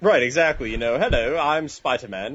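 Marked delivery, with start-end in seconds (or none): 1.0-2.4 put-on British accent. Joking about a British version of a comic hero, mock British Spider-Man voice. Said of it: "I had the accent".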